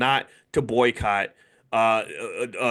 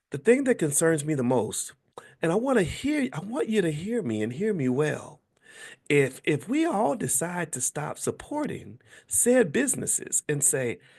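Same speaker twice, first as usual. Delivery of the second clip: sweet put-on voice, higher pitched; 6 semitones higher than usual. Imitating Tabitha Brown asking people not to boycott: Tabitha Brown's sweet baby voice. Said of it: "I can't do Tabitha Brown".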